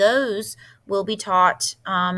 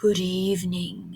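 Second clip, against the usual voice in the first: quieter put-on monster voice; 4 dB quieter than usual. Narrator reading a story, the substitute monster greets the child: Herbert's low, breathy voice. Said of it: "said a low and breathy voice".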